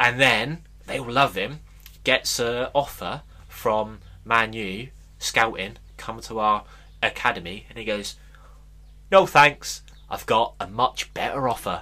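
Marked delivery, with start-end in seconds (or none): 9.1-11.8 put-on casual, offhand Manchester accent. Retelling a player's reply to a scouting offer, in a Manc accent. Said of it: "In a Manc accent".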